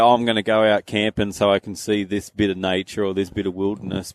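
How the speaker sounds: plain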